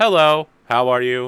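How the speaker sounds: loud little droid voice. Voicing the ship's droid Wrath greeting the players: Wrath droid voice. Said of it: "deploying a speaker and like".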